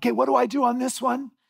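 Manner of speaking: high, loud yelling. Retelling a rafting trip, quoting a man yelling before a waterfall: retelling a yell. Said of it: "he's yelling".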